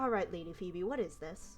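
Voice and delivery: put-out, exasperated, annoyed, irritated tone. Voicing an annoyed nobleman confronting Lady Phoebe: annoyed. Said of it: "he seems rather annoyed with you".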